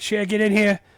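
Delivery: put-on imitated man's voice. Quoting a scene, saying his line to cher just like him, imitating his voice. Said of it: "I just say it like him as best as I can".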